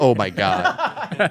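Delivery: jittery, scared, nervous, panicky outburst. Retelling how a scared father reacted before the speech, imitating a nervous man. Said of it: "He's nervous as hell".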